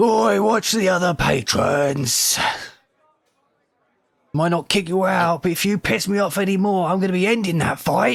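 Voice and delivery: booming bellow. As a rowdy patron is knocked toward the bar, Valsen Minstros bellows commandingly. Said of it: "you'd hear this bellowing, commanding voice".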